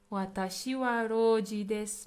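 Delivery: ordinary talk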